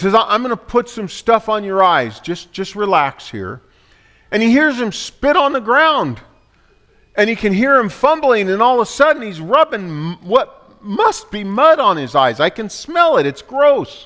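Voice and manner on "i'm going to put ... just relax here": normal talking voice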